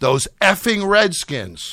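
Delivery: loud, high-pitched shout at the top of the lungs. Retelling a friend's outburst in a crowded bar: retelling a shout. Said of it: "says at the top of his lungs".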